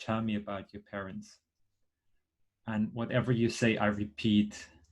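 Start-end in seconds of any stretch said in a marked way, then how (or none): 0.0-1.4 gentle, hushed, very soft, quiet, calm, soothing voice. Speaker showing how they ask you about your parents: soft, quiet, calm voice. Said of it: "with a really soft, really, um, really quiet and calm voice".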